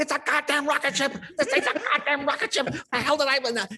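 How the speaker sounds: put-on, shrill, very high, enraged ranting yell. Telling a story, voicing his dad on the drive home, imitating dad screaming. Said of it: "he just screaming at me all the way home".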